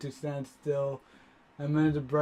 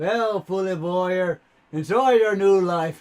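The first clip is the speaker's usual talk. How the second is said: booming, raised, loud voice; 4 semitones higher, 8 dB louder than usual. Narrating to the listener as Romo, who picks them up, in a booming voice. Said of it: "saying the booming voice".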